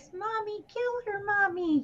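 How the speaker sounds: put-on very high, hushed, soft little kid voice. Recall how creepy the killer was when talking as her child, in Pamela Voorhees's little kid voice. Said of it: "her doing the little kid voice".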